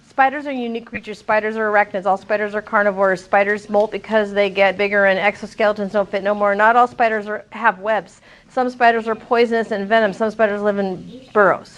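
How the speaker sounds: low, rushed reading straight through without pauses. Demonstrating reading the whole text as one sentence, reading fast without pauses. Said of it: "I read so fast because I didn't stop".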